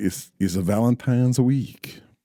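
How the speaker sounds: creepy, romantic put-on French lover accent. Speaker telling a friend it is Valentine's week, in a creepy romantic French voice. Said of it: "do you like my uh, creepy romantic French voice?".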